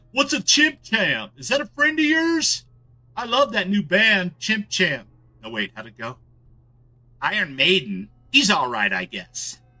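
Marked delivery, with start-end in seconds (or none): 0.1-5.0 put-on very high, clueless, out-of-touch old-timer voice. Joking about a phrase, the speaker says it in a boomer voice for fun. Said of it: "saying it in a boomer way".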